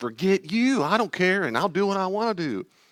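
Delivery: put-on very high, rebellious, defiant child voice. Showing how a child might answer a critical parent: rebellious child voice.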